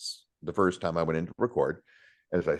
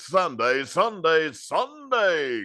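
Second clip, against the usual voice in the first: very high, hyped monster truck arena announcer voice; 9 semitones higher than usual. Speaker recalls the first note he was given, demonstrating a monster truck rally announcer. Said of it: "Monster Truck Rally".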